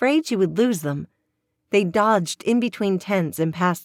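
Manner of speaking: plain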